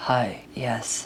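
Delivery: very low, very deep, soft put-on demo voice. Recalling their old call-center voice for adult services, very deep voice. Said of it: "my voice was something like, hi, yes, and uh, this deep".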